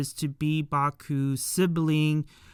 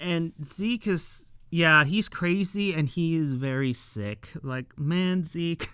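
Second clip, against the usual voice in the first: normal talking voice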